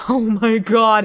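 put-on panicked voice. Recounting hearing the cleaners vacuuming, retelling own panic. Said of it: "And I'm panicking".

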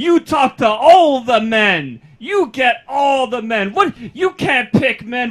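put-on very loud, shrill, drunk top-of-lungs yelling. Retelling a drunk woman on a bus, imitating a drunk woman yelling. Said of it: "on the top of her lungs yelling".

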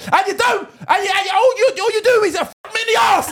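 re-enacted shout. A parent re-enacting what they shout at their son, retelling a shout. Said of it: "Sometimes I make mistakes when I'm shouting".

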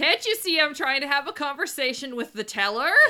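small, mild yell in a character voice. Playing a character who turns around at people in line: yelling in character. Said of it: "I suddenly turn around and yell".

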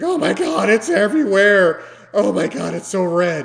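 put-on high, loud girly shriek.

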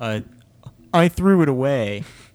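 dopey, stupid-sounding voice, very loud, slow and drawn out. Retelling asking a brother about the milk: stupid Brad voice. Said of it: "And his stupid Brad voice".

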